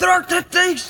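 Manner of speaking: very high, loud, horrified cry. Narrator reads a character's cry after he springs back from the bog, with horror. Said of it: "he said with horror".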